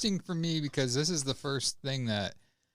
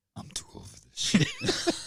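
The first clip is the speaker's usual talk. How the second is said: voice pitched way up high. Quoting a film line in a Danny Glover impression. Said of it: "Danny Glover".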